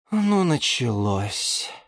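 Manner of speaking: said on a sigh. As the plants' quarrel starts up again, a liana speaks with a sigh. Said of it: "вздохнула Лиана Диана".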